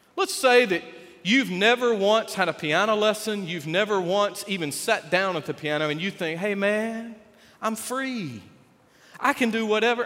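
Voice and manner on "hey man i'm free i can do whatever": mellow, easygoing, slow, laid-back hippie drawl. A speaker voices the thoughts of a piano beginner; hippie voice. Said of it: "I don't know why I've got that hippie voice".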